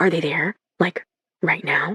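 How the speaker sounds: hushed whisper. Reading a story aloud, narrator asking a friend on a call: whispering. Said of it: "I lower my voice to a whisper".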